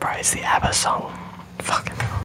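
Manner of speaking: hushed whisper. Answering another speaker about a guy's name: whispering. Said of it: "Why are you whispering?".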